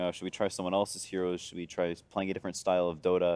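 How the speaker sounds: plain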